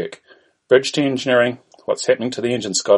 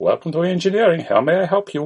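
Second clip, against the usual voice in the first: put-on Indian accent; 6 semitones higher than usual. Voicing the engineering section answering Kirk's call, in an Indian accent. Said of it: "That's my Indian voice".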